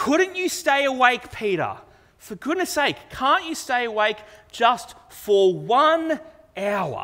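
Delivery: acted fed-up, frustrated tone. Retelling Jesus speaking to the disciple who fell asleep: acting out Jesus's frustration. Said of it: "You can hear the frustration in Jesus' voice here".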